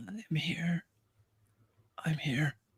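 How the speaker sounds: weak, dry, raspy voice, high, hushed, very quiet. Voicing a weak captive answering from a chair: weak, dry, raspy voice. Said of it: "A weak, dry, raspy voice".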